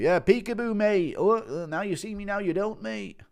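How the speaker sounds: very high-pitched peekaboo-playing voice. Acting out Aspinall playing peekaboo with a baby: Aspinall impression. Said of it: "Impression of Aspinall".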